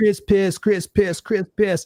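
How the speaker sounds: put-on high jeering taunt, mocking tone. Retelling how a guy used to taunt them: imitating a taunt. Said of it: "he used to taunt me like".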